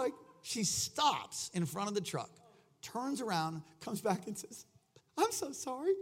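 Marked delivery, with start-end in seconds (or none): 5.2-5.9 mock weepy crying voice, pitched up. Retelling what a stranger said through tears: imitating a woman crying. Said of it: "And she's crying".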